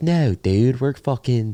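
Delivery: put-on heavy Maryland accent, laid on thick. Showing how the speaker talks with friends back home: thick Maryland accent. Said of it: "I have friends with like a thick Maryland accent where it's like whenever I go home, I start doing like".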